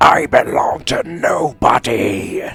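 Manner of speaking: very loud, slow, drawn-out, booming gravelly voice. Chatting between matches, trying a Megatron impression. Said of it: "I could probably do a good Megatron right now".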